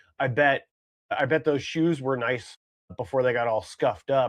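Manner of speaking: ordinary talk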